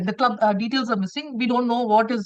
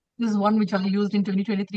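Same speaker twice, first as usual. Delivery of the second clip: usual speaking voice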